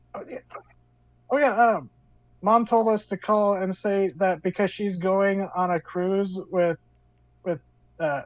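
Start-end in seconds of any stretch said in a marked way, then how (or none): none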